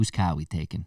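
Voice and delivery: put-on speaking with Boston accent. Picturing Ben Affleck calling for Batman: Ben Affleck Boston accent. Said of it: "I always picture him with a accent".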